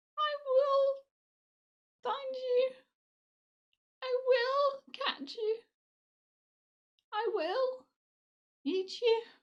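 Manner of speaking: shrill, very high and very loud voice. Telling a story, voice the rising specks of ash in a very high-pitched voice. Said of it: "very high-pitched voice".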